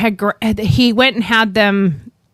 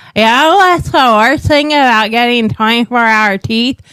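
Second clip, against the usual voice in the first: put-on toothless speech, louder; 4 dB louder than usual. Retelling what was said to the nurse: imitating talking without teeth. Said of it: "I talking like this".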